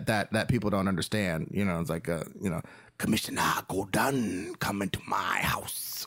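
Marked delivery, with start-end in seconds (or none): 3.0-6.1 slow, drawn-out, weird-sounding patois delivery. Showing how Batman should talk: Batman voice in weird patois. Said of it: "this weird patois".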